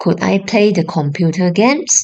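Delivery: ordinary talk, nothing marked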